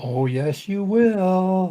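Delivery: high, loud sing-song. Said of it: "she said in a sing-song way".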